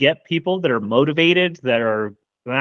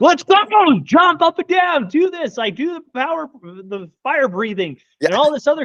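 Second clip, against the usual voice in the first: put-on passionate hype, much higher pitch; 12 semitones higher than usual. A speaker acts out how he talks when passionate, acting out passionate hype. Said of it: "he is passionate and he's like".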